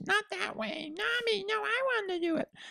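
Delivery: put-on very high, slow, drawn-out kid voice. Acting out what little babies say, in a Cartman-like kid voice. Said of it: "You sounded like Cartman from South Park".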